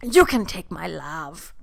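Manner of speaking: monster voice, mock Icelandic accent. Acting out the Icelandic Worm Monster, like Pepe Le Pew seeing the cat, in a mock Icelandic accent. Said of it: "whatever Icelandic accent is".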